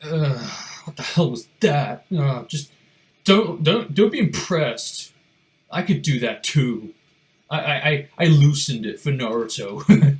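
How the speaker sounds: loud, drawn-out, slow, deliberate, belted anime-style voice. Retelling an anime scene, acting out Sasuke's reaction: Sasuke voice. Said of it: "pans to Sasuke, and he's like".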